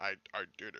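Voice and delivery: very low, super deep, very soft, dead serious voice. Describing a very serious scene, imitating him: super deep voice. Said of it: "Like with that super deep voice".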